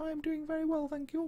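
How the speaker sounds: very high, soft, silly put-on voice. Voicing the reply of someone just greeted, funny put-on voice. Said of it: "I'm doing giving you a funny voice".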